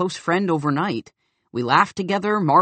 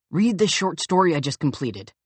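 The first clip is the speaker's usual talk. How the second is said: ordinary talk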